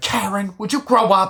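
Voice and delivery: high-pitched, loud, angry yelling.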